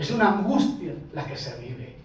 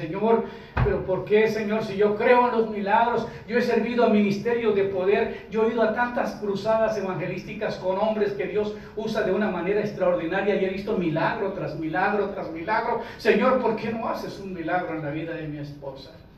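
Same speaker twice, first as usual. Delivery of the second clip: ordinary talk, nothing marked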